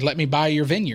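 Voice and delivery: ordinary talk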